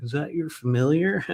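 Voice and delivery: play-acted snarky, sarcastic tone. Telling of a woman carrying a caged cat, retelling a sarcastic quip. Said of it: "you know me in my sarcastic way".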